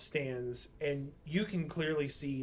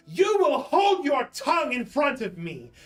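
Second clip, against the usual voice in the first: booming voice, very loud and very high; 11 semitones higher, 11 dB louder than usual. Game master voicing a woman who wheels around to silence a man; booming voice. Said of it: "her voice just booms in this antechamber".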